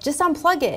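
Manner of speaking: high, loud yell. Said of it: "and I'll yell".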